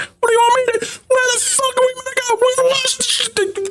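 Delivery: panicked shouting. Voicing sailors whose goods are being stolen: screaming at each other. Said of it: "screaming at each other".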